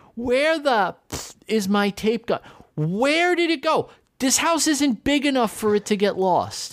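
mock very high, panicked, drawn-out screaming. Retelling running around the house searching, imitating own screaming. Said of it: "I'm screaming".

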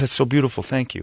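mock weepy, high, choked-up tearful crying voice. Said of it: "the mom starts, like, crying".

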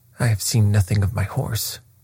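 usual speaking voice

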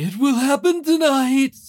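very high voice that comes out puppet-like. Reading the prophecy's first line aloud in an attempted Voldemort voice. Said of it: "I was trying to do Voldemort's".

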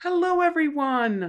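loud, very high voice. Greeting everyone at the start in a louder, higher-pitched voice. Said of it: "I gotta talk louder, more high pitched".

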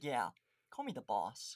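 plain

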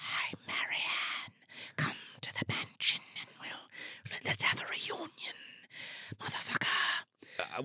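hushed, breathy, barely voiced, very quiet whisper. Retelling how the killer whispers to marianne: whispered. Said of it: "they whisper like this".

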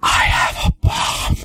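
hushed, conspiratorial whisper, slow and repeated. Retelling what a friend kept saying in the airport security line: imitating a whisper. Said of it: "starts whispering repeatedly".

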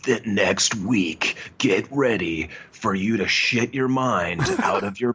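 big-screen movie trailer announcer voice. Describing how a movie's ad sounded to the audience: movie trailer guy voice. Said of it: "it had that like trailer guy voice".

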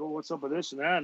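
taunting, needling, chirpy tone. Retelling how a newly called-up player was chirping in the room: imitating someone chirping.

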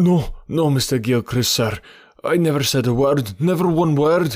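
high, cried-out voice. The servant protests to Mr. Gilchrist, crying out. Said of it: "cried the servant".

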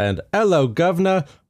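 bad put-on Cockney accent. A podcast host introduces his co-host, bad fake Cockney accent. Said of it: "We apologize to all of our English and Cockney-speaking listeners".

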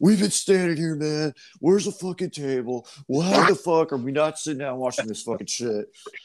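furious, angry yelling and screaming rant. Acting out the middle brother confronting the bar manager, retelling brother's angry screaming. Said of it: "literally like screaming at the bar manager".

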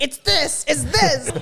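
booming, full-throated, loud, high, drawn-out scream. Imagining a viewer watching who knows the term: imitating James screaming. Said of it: "he's screaming it".

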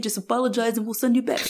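laid-back slangy bro talk. Retelling a movie scene, imitating the elders as modern bros. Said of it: "That was the voice".

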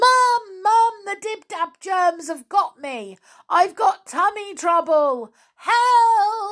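very high, top-of-the-lungs, all-out shouting. The narrator calls from the bathroom to wake Mum for help: shouting at top of voice. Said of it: "I had to shout at the top of my voice".

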